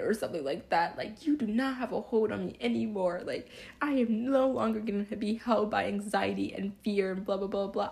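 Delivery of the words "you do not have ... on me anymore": mock furious yelling, every word pushed hard. Recounting a tearful prayer, telling Satan off, retelling an angry yell. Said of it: "I was yelling at Jesus".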